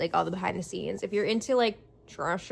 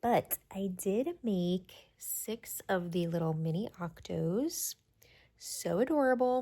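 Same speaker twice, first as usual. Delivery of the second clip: hushed, quieter voice; 5 dB quieter than usual. Checking in late at night with viewers, speaking quietly. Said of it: "I'm trying to be quiet".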